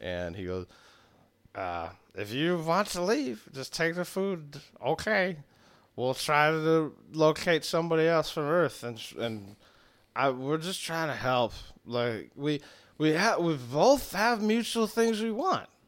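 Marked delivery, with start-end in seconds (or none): 2.1-15.6 put-on drunk, defeated, worn-out voice, higher. Voicing a character asking the players to stay: drunk and defeated character voice. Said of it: "he's clearly just drunk and just done".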